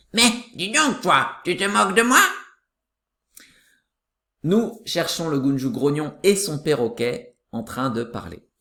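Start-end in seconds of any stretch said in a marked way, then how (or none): 0.1-2.2 little parrot's tiny voice. A narrator reads the parrot repeating the grumpy one's words, in a small parrot voice. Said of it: "répéter tout ce qu'il dit avec sa petite voix".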